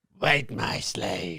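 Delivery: dark, evil sci-fi emperor voice. Asked for a snake-like voice, the speaker does a Palpatine-like voice. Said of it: "That's a Palpatine-like voice".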